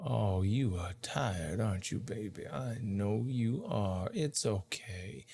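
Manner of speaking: murmuring quietly. Voicing a woman soothing a tired player character: murmuring. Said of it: "You guys can hear her kind of murmuring this".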